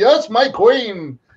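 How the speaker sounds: high-pitched, stately, grand regal voice. Describing a cartoon character who calls Megatron his queen: regal royal Inferno voice. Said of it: "he's always got this regal, royal voice".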